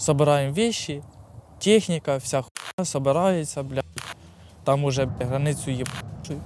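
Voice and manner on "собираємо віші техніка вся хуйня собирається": plain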